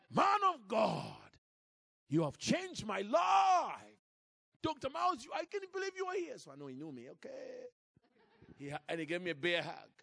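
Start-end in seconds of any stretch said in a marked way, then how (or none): 0.1-6.3 very high, forceful, aggressive Nigerian manner. Retelling meeting a Nigerian man at a TV station, the speaker imitates his aggressive Nigerian style. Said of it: "aggressive Nigerian style".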